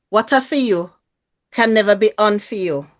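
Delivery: imitated Jamaican accent. Taking a turn saying a phrase for the group, in a Jamaican accent. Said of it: "say it with a Jamaican accent".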